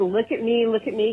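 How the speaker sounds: usual speaking voice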